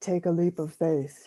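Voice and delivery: put-on deep voice. Recalling a voice heard while wondering how to make a difference, deep voice. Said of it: "I hear this deep voice say".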